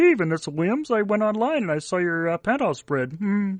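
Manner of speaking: high-pitched puppet cartoon frog voice. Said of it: "Kermit the Frog be all like".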